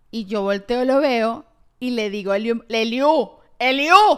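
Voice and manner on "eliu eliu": put-on loud call, louder. Retelling calling out to Eliu on seeing a driverless car: imitating her own loud call. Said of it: "además así durísimo".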